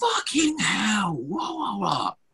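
very high, drawn-out yell at the top of lungs. Telling of a man seated across the aisle on a plane, retelling a loud shout. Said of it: "out as loud as he fucking can".

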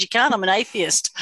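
normal talking voice

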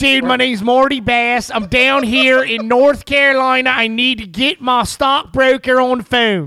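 loud, high put-on Baltimore accent. Imitating a loud woman on the phone in a restaurant: imitating a Baltimore accent. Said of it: "All of [name]'s impersonations sound just like that".

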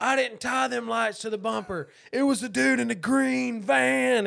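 imitated drunken screaming. Retelling a hammered buddy screaming from the back the whole way home. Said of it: "And he's screaming it".

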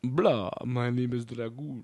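put-on low, soft cartoon vampire voice. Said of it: "the bleh voice".

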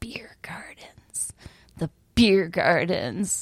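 put-on grandmotherly old woman voice. Recalling how her grandmother used to say it, imitating Grandma Renshaw. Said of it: "And she'd say it like".

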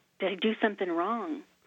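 plain

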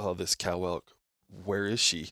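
ordinary talk, nothing marked

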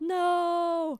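loud, high-pitched yelled "no".

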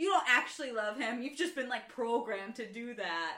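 ordinary delivery

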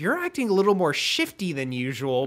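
normal talking voice

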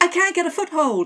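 clumsy put-on American accent. Voicing a line while telling a story, in a bad american accent. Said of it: "This is my bad American accent again".

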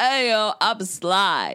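loud, very slow, every word drawn out. Showing how Sylvester Stallone really sounds. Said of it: "He's like".

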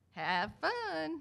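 put-on soft, high, lightly done North Carolina accent. Quoting the golf coach's words at every tee-off: little North Carolina accent. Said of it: "in her little North Carolina accent".

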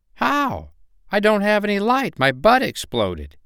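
little firefly voice, very high, swooping. Narrator reads the firefly's reply to the turtle in Sparky the firefly voice. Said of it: "there was a firefly named [name]. Whenever he lit up his light, he was the brightest and most beautiful firefly in the sky. All of the other fireflies would come to watch his light show and cheer him".

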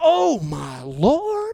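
put-on drawling southern Texas accent, sing-song. Speaker retells Bill reacting to a golf shot, in Bill's Southern Texas drawl. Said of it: "in his Southern Texas drawl".

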